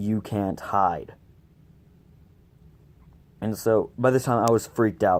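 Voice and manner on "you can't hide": deep, eerie, menacing and creepy voice. Telling a Ouija board story, imitating a deep, creepy voice. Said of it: "I heard a deep, creepy voice saying".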